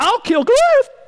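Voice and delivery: put-on squeaky, very high-pitched teen voice. Imagining David as a fourteen-year-old who thinks he can't be beat, David's squeaky teen voice. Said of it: "probably his voice squeaks".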